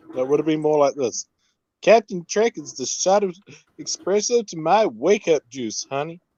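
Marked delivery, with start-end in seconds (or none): 1.8-6.1 laid-on, fake American Southern accent. Host redoing a viewer's message the way it should have sounded: fake Southern accent. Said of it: "I love to fake Southern accents".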